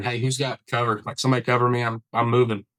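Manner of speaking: normal talking voice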